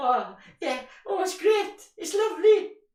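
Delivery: high, mock-sweet, gushing voice. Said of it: "everybody nods and smiles and goes".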